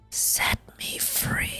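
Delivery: eerie, ghostly, soft, breathy whisper. Narrating to listeners as voices from the hallways call out, in a ghostly whisper. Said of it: "These voices whisper out to you".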